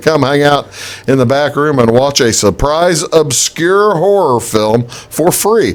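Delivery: ordinary talk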